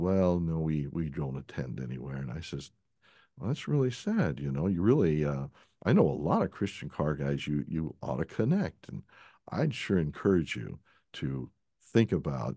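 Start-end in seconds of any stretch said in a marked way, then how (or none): 0.0-2.2 mock-sheepish reply, quieter. Retelling an older man's answer when asked about church, retelling a sheepish reply. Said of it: "he kind of sheepishly says".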